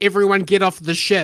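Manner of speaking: usual speaking voice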